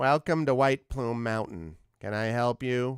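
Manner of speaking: voice pushed through the nose, nasal. A game narrator voices a sphinx greeting the adventurers, nasal sphinx voice. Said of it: "In a nasal voice".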